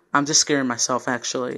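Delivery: ordinary delivery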